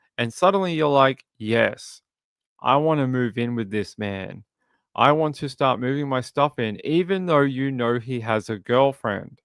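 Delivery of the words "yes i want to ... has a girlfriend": normal talking voice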